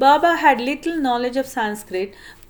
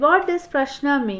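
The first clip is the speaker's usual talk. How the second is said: usual speaking voice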